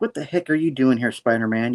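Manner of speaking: plain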